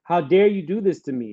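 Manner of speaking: plain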